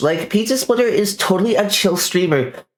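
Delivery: high, put-on Valley Girl voice. Describing a streamer, as usual in a put-on valley girl voice. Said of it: "I do it in a Valley Girl voice".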